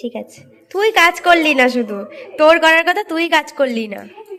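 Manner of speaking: angry scolding.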